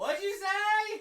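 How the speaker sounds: all-out, very loud, very high-pitched yell. Playing a character who yells back from thirty yards away: yelling at top of lungs. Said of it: "yell at the top of my lungs".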